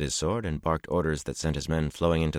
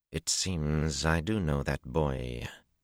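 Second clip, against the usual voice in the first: soft, very slow, drawn-out drawl. A woman looking after the horsemen as the last one passes, soft drawl. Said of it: "she drawled softly".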